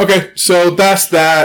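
very slow, loud yell. Closing a topic with another speaker: loud yelling. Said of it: "That was loud".

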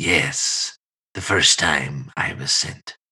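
low, eerie, unsettling, creepy voice. A player answers the group's question about being sent, in a creepy voice. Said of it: "Get your creepy voice ready".

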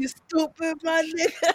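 very loud, very high-pitched, shrill yell. Repeating the other speaker's line back: imitating how he said it. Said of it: "He was like".

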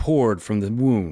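ordinary delivery

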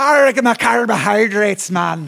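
put-on Scottish pirate accent. Explaining why a big breakfast soaks up alcohol, a speaker slips into a Scottish pirate accent. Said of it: "That's pirate accent".

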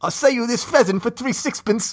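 put-on Cockney accent, very high. Asked to do cockney, trying out british lines in a cockney accent. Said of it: "You got to do Cockney".

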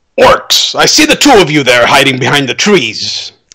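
loud calling out, shouting. A player character calls out to orcs hiding behind trees: loudly calling out. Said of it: "I'm going to loudly say".

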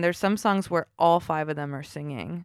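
usual speaking voice

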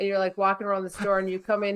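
ordinary talk

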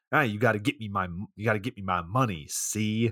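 put-on tough gangster way of talking. Recounting a scene where Lewis is shaking some guy down, imitating gangster talk. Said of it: "it's gangster talk".

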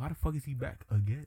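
confused, totally baffled tone. Retelling a movie scene: imitating a confused Dormammu. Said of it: "he was confused".

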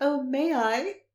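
mock excitement, high, thrilled and eager. Acting out a character's reply to a gathering invite: imitating Leafpaw, so excited. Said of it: "so excited".

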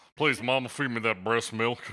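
put-on old man voice. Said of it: "talking like an old man when he was fresh out the womb".

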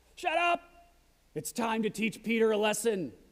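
acted-out, put-on shouting. Retelling a Snickers ad where a man brings an axe down on the table, retelling a shout.

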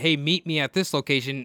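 plain

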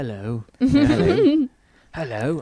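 drawn-out, swooping, sing-song British film-star voice. Doing a voice that is fun to do: Michael Caine impression. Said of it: "Michael Caine".

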